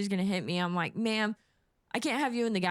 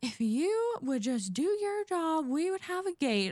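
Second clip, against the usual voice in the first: put-on exasperated, high, rising frustrated yell; 8 semitones higher than usual. Retelling a frustrated passenger yelling about the gate: imitating a yelling passenger. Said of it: "kinda starts yelling at me".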